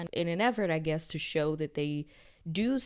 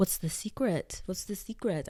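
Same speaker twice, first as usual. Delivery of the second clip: clumsy, unconvincing, put-on French accent; 3 semitones higher than usual. Retelling what Dreamsat asked while sitting in the chairs, Dreamsat in bad French accent. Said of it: "I don't have a good French accent".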